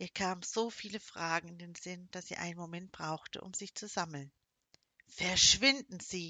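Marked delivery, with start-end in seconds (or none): 5.1-6.3 hissed, louder. Narrator reads a woman's line to him, hissed. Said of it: "zischte sie".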